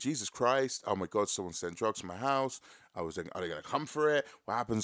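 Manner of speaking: ordinary talk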